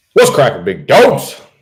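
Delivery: loud, high-pitched yelling. Opening a channel video and greeting viewers, yelling. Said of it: "I gotta stop yelling".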